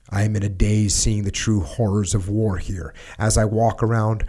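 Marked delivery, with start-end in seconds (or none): none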